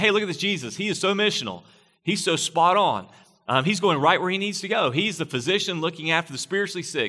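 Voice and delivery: high, gushing, admiring tone.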